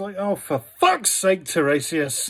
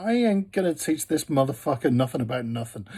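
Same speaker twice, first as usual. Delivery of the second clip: put-on weary sighing voice, lower; 4 semitones lower, 4 dB quieter than usual. Retelling a myth, voicing Hera: mock sighing as Hera. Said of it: "Hera kind of sighs and is just like".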